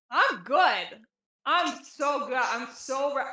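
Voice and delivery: very slow, loud, slurring speech. Creed, after stumbling into a chair, answers whether he is all right, slurring. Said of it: "he's slurring his words at this point".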